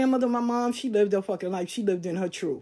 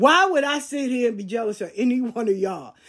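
normal talking voice

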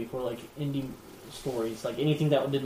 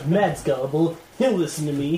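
loud, cartoonish anime-villain voice; 4 semitones higher, 8 dB louder than usual. Voicing a competitor's imagined thoughts about a friend, in a bad guy anime voice. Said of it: "like bad guy anime voice".

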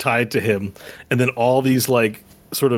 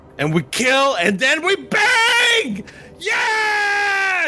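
very high, very slow, swooping goblin yell. Voicing a goblin character in a story, goblin yelling. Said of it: "He yells out".

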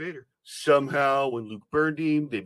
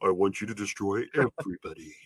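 put-on dark villain voice, lower; 6 semitones lower than usual. Imagining Vader answering Maul: Darth Vader voice. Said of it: "to Vader".

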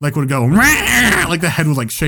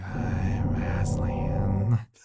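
very low, hushed, creepy half-whisper; 8 semitones lower, 11 dB quieter than usual. Describing a stage actor's voice, imitating his creepy half-whisper as Aslan. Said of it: "he would always talk this really creepy whisper".

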